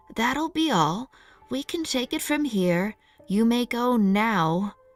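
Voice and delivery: stern, severe, no-nonsense tone with now drawn out. Narrator reads Missus Naggles's line, spoken in her stern voice. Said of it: "Missus Naggles was using her stern voice".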